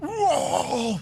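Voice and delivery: mock startled whoa, very high and breathy.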